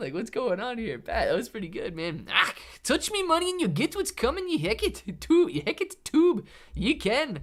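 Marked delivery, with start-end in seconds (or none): 2.3-6.5 put-on leprechaun accent, very high and swooping. Performing a line again for listeners, in a leprechaun voice. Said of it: "sound like a leprechaun".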